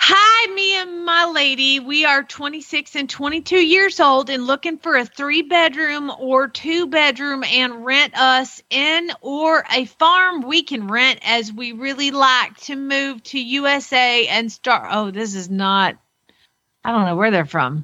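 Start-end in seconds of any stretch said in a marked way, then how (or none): 0.0-14.9 fake southern drawl, higher pitched. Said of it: "doing it in a Southern accent".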